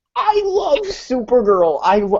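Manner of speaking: high-pitched voice breaking mid-word. Speaker declares love for Supergirl after the others teased a friend over it, voice cracking. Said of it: "my voice just cracked there".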